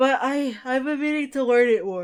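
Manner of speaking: loud speech, words stretched through a yawn. Speaking casually, yawning while talking. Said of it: "Why do I keep yawning?".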